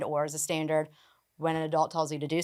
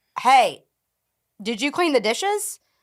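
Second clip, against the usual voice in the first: put-on knowing, passive-aggressive tone; 7 semitones higher, 4 dB louder than usual. Retelling how a client's mom asks about the dishes: imitating a passive-aggressive question. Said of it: "she's passive aggressive".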